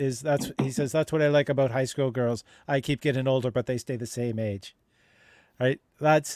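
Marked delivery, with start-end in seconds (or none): none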